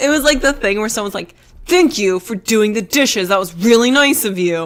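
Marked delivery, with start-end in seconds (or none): 1.7-4.6 put-on angry tone. Retelling how someone said nice things, imitating an angry tone. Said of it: "why are you saying nice things in an angry tone".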